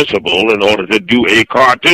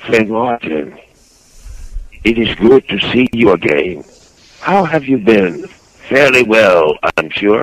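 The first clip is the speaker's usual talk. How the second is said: smooth, put-on voice. Answering what Tan's voice sounds like: smooth-talking Tan voice. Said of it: "He talks real smooth".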